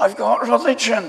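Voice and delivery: high, loud, excited protesting voice.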